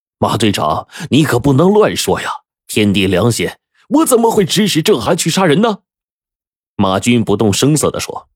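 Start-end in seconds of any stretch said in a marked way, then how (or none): 0.2-5.8 high, furious, hot-tempered angry outburst. A man accused of ordering a killing protests to the team captain, angrily. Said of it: "气冲冲的说".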